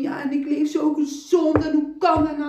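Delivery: tearful high-pitched voice. Recounting what the doctor said, the speaker acts out their past self, retelling crying. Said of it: "En ik zo daar jankend zo van".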